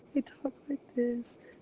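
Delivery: soft-spoken, hushed way of talking. Describing soft-spoken women handling a room full of kids, soft-spoken voice. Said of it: "women who are soft spoken".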